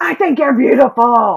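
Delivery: really angry. Explaining their angry compliment night, delivering a compliment in an angry voice. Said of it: "in a really angry voice".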